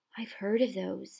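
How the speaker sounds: hushed voice, under the breath. Narrator voicing a boy who gasps at an unwrapped gift, in a hushed voice. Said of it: "he said in a hushed voice".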